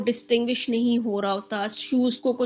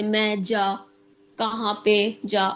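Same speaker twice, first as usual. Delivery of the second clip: very slow, broken, fragmented word-by-word speech; 2 semitones lower than usual. Demonstrating how aphasia makes it hard to build sentences, halting fragmented speech. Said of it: "मतलब इस तरह के sentence हो रहे होते हैं".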